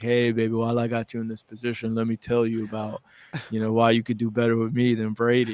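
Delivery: imitated suave, smooth-talking voice. Imagining what the jujitsu instructor says to the wife: imitating a suave smooth talker. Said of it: "so he's probably got a cool accent, you know, suave".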